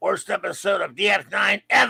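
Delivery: creaky and rough voice. Reading out a viewer's episode review in Simpsons comic seller voice. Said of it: "In voice of, of Simpsons, uh, comic seller".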